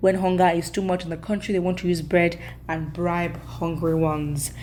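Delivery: plain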